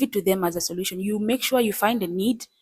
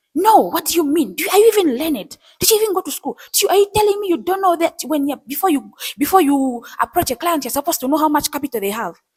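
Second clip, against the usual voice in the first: loud, high voice raised in demanding disbelief; 8 semitones higher, 6 dB louder than usual. Acting out what a man said to the speaker, retelling a raised voice. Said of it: "raising his voice".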